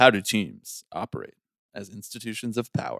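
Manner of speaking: put-on announcer voice, deep and hushed newscaster. Co-hosts taking turns on their newscaster-style intro questions, in a deep newscaster voice. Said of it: "let's put on like our deep voice".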